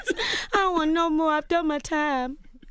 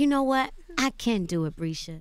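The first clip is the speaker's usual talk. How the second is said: encouraging, cheering-on tone; 5 semitones lower than usual. Speaker shows how she talks to herself, in her encouraging voice. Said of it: "I feel like that's my encouraging voice".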